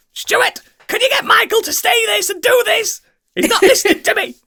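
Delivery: very high, pushy, insistent voice. Imitating Pip leaving a voicemail: impression of Pip. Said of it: "she's always voicemailing him".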